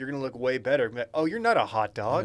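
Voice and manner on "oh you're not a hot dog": normal talking voice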